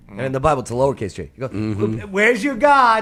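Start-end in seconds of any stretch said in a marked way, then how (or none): 1.5-3.0 slow, high, drawn-out mocking taunt. Retelling a prophet taunting rival prophets: imitating Elijah mocking. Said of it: "So Elijah was mocking them all".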